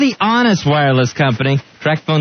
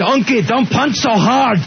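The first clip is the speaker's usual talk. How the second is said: put-on Scottish ogre voice, higher pitch; 5 semitones higher than usual. Doing a Shrek line after joking about Shrek the Musical: Shrek voice. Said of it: "That was a pretty damn good impression".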